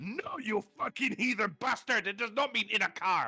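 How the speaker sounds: mock-raging French accent. Retelling how a french guy reacted to him; mock-raging french guy. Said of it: "This French guy is fucking raging behind".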